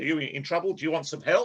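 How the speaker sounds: put-on quick, careful, toned-down Australian accent. Recounting a story, the speaker quotes an australian man in an australian accent. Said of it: "I'll try and not do the accent".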